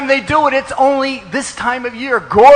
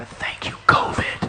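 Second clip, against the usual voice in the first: very quiet voice. Giving a class to many devotees, saying it very quietly. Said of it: "I'm gonna say this very quietly".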